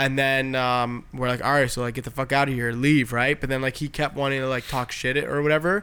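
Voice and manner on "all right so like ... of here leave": usual speaking voice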